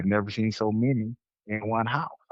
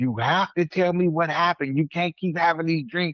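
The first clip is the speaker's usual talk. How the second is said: high, exploding, insistent put-on angry outburst; 7 semitones higher than usual. Retelling how a woman exploded at him, imitating an angry outburst. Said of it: "She just exploded".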